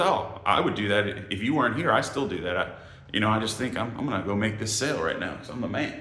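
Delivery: ordinary talk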